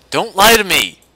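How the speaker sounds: very loud, high, furious yell at full force. In a scene, confronting the security officer who came late, angry yelling. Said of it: "what you're yelling at me about".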